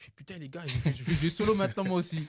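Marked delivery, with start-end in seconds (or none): 0.9-2.3 put-on Kinshasa accent. Retelling his angry words to a teammate after a goal: imitating own past accent. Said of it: "avec mon accent, euh, tout ça, ça ressort bizarre".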